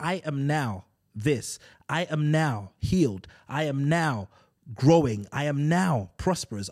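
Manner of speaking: slow, firm, definitive, emphatic tone. Showing how to pray as a declaration: firm confident declaration. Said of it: "you want to declare that".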